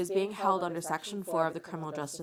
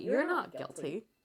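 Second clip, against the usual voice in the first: higher, mock sarcastic tone; 3 semitones higher than usual. Retelling own reaction to a suspect's question: dripping with sarcasm. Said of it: "Dripping with sarcasm".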